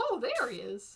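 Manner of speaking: high cartoon mouse voice. Player spotting a character he was looking for, slipping into a Mickey Mouse voice. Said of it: "slid into a Mickey Mouse voice".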